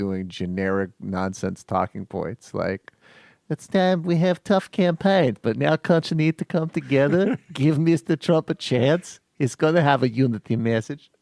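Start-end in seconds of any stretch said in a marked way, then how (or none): 3.5-11.0 fake Russian accent, pitched up. Introducing a new character, a Russian Trump representative, in a mock Russian accent. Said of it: "new character is Russian Trump representative".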